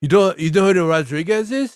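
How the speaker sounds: put-on South African accent. Recalling the South African guy he worked for at the mall, imitating his accent. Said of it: "he had like a weird accent".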